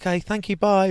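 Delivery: put-on high-pitched voice. Retelling signing off, quoting the speaker's past self in a high voice. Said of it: "My high voice".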